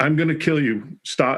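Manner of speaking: urgent scream, pushed out hard. Retelling ordering an armed man to stop as he moved closer: retelling a scream. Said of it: "And I'm screaming".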